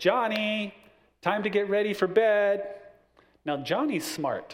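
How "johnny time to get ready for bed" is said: acted, raised, high-pitched calling-out voice. Telling a story about a child at bedtime, imitating a mom calling down the hallway. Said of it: "Mom yells down the hallway".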